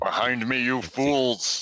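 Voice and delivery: shouting. Warning the party in character, shouting in character. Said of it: "How loud are you saying that".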